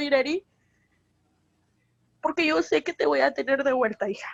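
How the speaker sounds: tearful voice, crying while speaking. Speaking to the daughter about having her back: crying while speaking. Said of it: "Estoy llorando".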